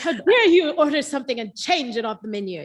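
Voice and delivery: loud, regal, royal-sounding voice. Imitating café staff reacting to a changed order: Queen of England voice. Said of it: "talking like the, the Queen of freaking England".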